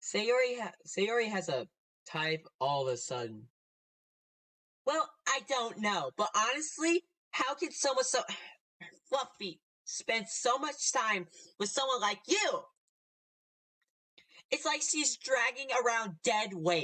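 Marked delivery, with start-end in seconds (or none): 4.9-16.8 put-on valley girl accent, higher pitch. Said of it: "that Valley Girl voice".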